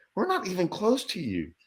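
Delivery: quiet, high-pitched half-whisper. Retelling a fishing trip, half-whispering to a companion about a nearby man, retelling a half-whisper. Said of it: "I'm whispering because I'm like".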